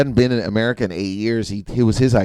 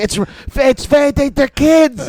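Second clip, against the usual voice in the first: imitated yell, higher and louder; 6 dB louder than usual. Retelling a mother scolding a father in front of kids: imitating mom yelling. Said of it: "my mom's yelling at him".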